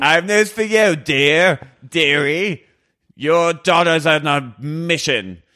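booming, deep Cockney man's voice. Acting out a heavenly figure calling Sherry: booming Cockney man's voice. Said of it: "She's Cockney".

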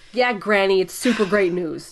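ordinary delivery

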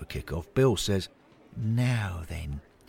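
plain reading voice

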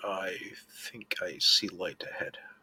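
hushed, low voice. A character speaks telepathically to everyone, speaking quietly. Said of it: "I'll say quietly".

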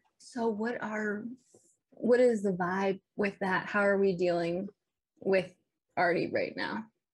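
confidential, confiding aside tone. Asking the group in character how they are dealing with Artie: lowered voice. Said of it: "kinda lower my voice to the group".

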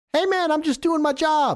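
very high, shrill, loud yell. A game master voices a character calling out before she runs off, yelling. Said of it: "You hear her yell".

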